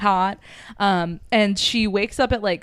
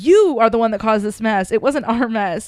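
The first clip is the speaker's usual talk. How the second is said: normal talking voice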